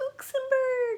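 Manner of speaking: tiny, squeaky, very high mouse voice. Recounting a geography puppet game, saying the smallest country in a mouse voice. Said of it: "we said it in a mouse voice".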